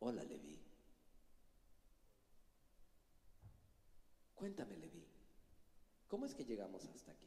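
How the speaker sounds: whispered, breathy late-night radio host delivery. Talking to Leví, asking how they got here, in a late-night radio voice. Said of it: "le hablas en la voz de radio nocturno".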